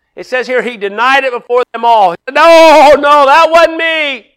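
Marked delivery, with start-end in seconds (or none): 2.4-4.2 very slow, loud, projecting, drawn-out outside voice. Retelling how he denied it before them all, the speaker acts it out: loud outside voice. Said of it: "He put on his loud outside voice".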